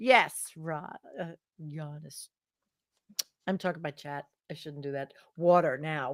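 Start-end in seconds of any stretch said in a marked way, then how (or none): 5.4-6.1 strong New York accent, lower pitch. Saying a word between drinks: strong New York accent. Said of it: "the most New York you have ever said".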